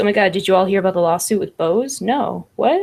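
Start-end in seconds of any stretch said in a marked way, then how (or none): none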